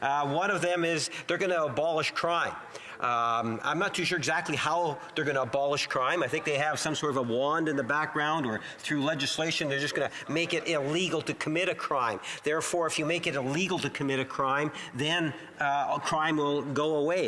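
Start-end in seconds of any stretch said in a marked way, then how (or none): none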